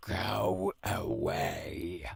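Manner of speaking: frightening, menacing voice. A voice behind a door answers a visitor claiming an important message, in a scary voice. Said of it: "That is a scary voice".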